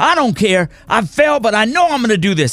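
acted loud talking. Retelling self-talk while snowboarding down the mountain, retelling talking loudly. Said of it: "I was real loud".

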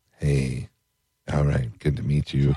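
soft, low, hushed put-on pop-star voice. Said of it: "Prince has a voice where he's like".

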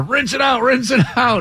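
desperate, high, pleading cry. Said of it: "he's begging her".

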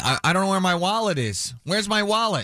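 put-on high, drunken girl bawling, repeated. Telling Ted about a drunk girl on the bus, imitating her yelling. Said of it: "She was just yelling".

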